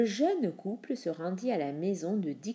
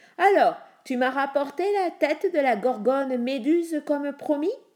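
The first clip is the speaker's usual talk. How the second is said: loud, high, jeering, scornful, sneering tone; 6 semitones higher, 6 dB louder than usual. Narrating the king addressing Perseus in the throne room, sneering.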